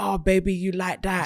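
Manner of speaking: whispering in a put-on voice. Retelling words whispered in the ear: imitating someone whispering. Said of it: "You're whispering in my ear saying".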